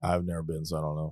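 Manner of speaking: glum, dejected, depressed-sounding tone. Admitting to never having been to the convention, sounding depressed. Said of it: "You sound so depressed".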